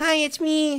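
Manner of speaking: fake, very high-pitched put-on voice. Imitating the voice that they put on, in a put-on high-pitched voice. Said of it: "There's the high-pitched one, which is the one they put on".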